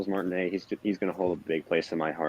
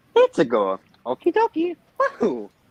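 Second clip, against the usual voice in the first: very high, swooping cartoon voice with stretched words; 7 dB louder than usual. Imitating the original voice actor's lines: Mario voice. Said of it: "you do a better Mario voice than I do".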